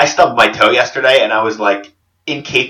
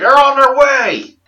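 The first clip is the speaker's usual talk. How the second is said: bad fake American accent, very high pitched; 3 dB louder than usual. Imitating a man thought to be faking, in a terrible fake american accent. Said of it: "faking an American accent".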